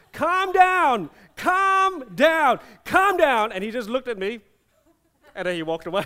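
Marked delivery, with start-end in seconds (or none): 0.2-3.5 very loud, very high, drawn-out yells. Retelling pushing someone onto a wall: retelling a shout. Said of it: "I shouted three times".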